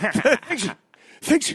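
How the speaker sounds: put-on stuttering voice impression. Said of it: "You should do it like Stuttering John".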